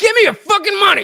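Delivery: very high-pitched, shrill, loud fake yelling. Joking about doing push-ups for money, the speaker yells at people: mock yelling. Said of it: "So I'm gonna start yelling at people more".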